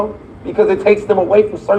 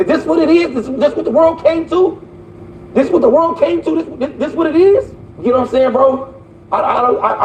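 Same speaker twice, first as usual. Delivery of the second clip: high, angry stuttering, words tumbling over; 6 semitones higher than usual. Speaking to another person, the speaker is mad and stuttering. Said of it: "I'm stuttering so much because I'm mad".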